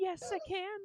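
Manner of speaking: very high, eager, excited stage whisper. Voicing Penny in a role-play scene as she answers: Penny's excited half-whisper. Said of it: "Penny's also gonna whisper, looking very excited".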